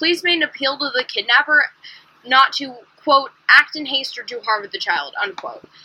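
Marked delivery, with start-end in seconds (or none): none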